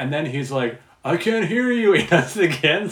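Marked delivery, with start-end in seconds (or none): 1.0-1.9 very high-pitched wrestler-style yell. Retell a wrestler holding out the mic to empty stands, acting out a wrestler yelling. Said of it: "where he's just yelling".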